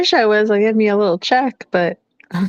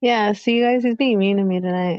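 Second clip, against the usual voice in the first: ordinary talk, nothing marked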